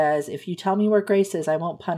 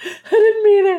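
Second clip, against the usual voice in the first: fake frantic, panicked voice, higher, louder; 10 dB louder than usual. Retelling how the book's hero keeps telling his rescuer he loves her: mock frantic freaked-out pleading. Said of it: "He's freezing and freaking out".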